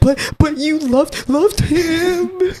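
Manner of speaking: very high, drawn-out, tearful sobbing voice. Retelling how someone broke down over a lost plush: imitating someone crying. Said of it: "him breaking down and crying".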